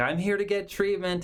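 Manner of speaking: cheerful, bubbly voice. Acting out a client arriving at a counseling center: acting bubbly. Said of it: "they are just bubbly and they're like".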